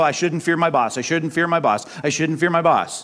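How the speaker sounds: ordinary talk, nothing marked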